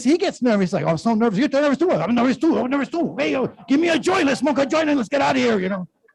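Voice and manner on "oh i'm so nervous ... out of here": high-pitched put-on Spanish accent. Acting out a nervous Chihuahua talking: Spanish accent. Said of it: "I don't know why I use a Spanish accent".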